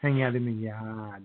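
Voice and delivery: put-on Boston-accented delivery. Joking about Boston with another speaker, Boston accent. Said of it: "Boston accent".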